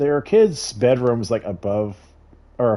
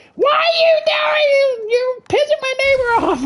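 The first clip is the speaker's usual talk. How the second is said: mock very high shrieking scream. Retelling a neighbor yelling at her kids: imitating a neighbor screaming. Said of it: "I hear her screaming at the kids".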